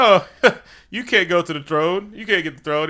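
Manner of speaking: put-on laughter while speaking. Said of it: "everybody's laughing like".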